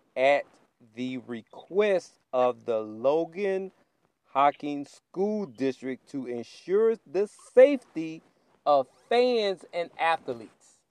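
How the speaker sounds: very slow, deliberate, word-by-word reading. Speaker reads a statement aloud so listeners can understand it, very slow reading. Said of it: "I'm gonna read this very slowly".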